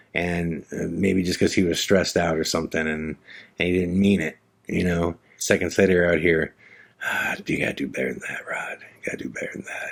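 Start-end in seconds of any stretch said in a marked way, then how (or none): 7.0-9.9 put-on muttering under the breath, lower and quieter. Retelling how dad scolded himself in the garage: imitating dad muttering under his breath. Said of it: "he just talked to himself under his breath".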